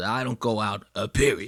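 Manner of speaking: imitated sassy delivery. Retelling what a coworker said on air, imitating Dave's sassy delivery. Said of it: "He goes".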